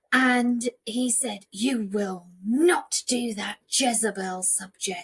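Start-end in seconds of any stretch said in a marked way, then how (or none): 1.5-5.0 put-on fatherly man's voice. Retelling a father forbidding drama as a subject: imitating father in a man's voice. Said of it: "obviously in a man's voice".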